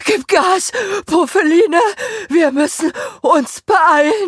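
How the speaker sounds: very high, loud, out-of-breath, rushed panting voice. A narrator reads a character urging a companion to hurry, panting. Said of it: "keuchte Achim".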